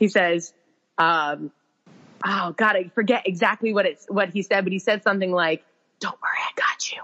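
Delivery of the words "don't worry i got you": soft, breathy whisper under the breath. Retelling what someone whispered in a dark room at night: imitating a whisper. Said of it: "And he just whispers".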